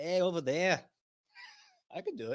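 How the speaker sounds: loud, swooping Australian accent drifting into leprechaun voice. Told he needs an Aussie voice, the speaker tries one: failed Aussie accent. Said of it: "that was more leprechaun than anything".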